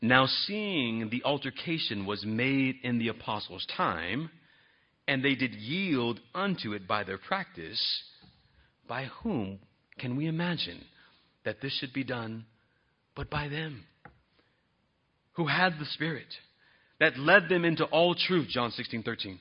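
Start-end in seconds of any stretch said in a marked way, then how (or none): 0.0-18.5 very slow, deliberate, drawn-out delivery. Speaker reads a quoted passage from a book aloud; reading very slowly. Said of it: "I'm going to read this very slowly".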